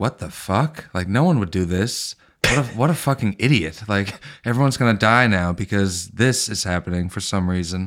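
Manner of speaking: normal talking voice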